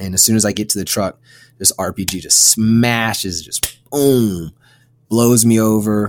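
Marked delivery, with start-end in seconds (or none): none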